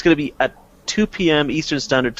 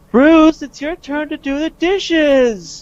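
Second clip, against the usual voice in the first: very high-pitched, bitchy whine; 5 dB louder than usual. Retelling a sketch where Wonder Woman walks into the kitchen: mock-whiny bitchy Wonder Woman. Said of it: "in a very bitchy, sort of whiny tone".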